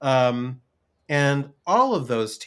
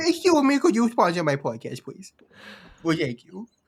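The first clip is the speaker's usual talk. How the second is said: high, swooping, pitched-up sing-song voice; 7 semitones higher than usual. Joking around asking listeners to sponsor the podcast in an Adam Sandler voice. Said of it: "Now I'm getting into Adam Sandler".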